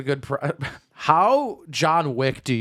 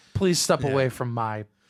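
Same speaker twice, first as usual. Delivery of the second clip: mock polite, put-on kind tone; 2 semitones lower, 3 dB quieter than usual. Playing the other speaker confronting a dog thief: imitating polite kindness. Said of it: "You're like".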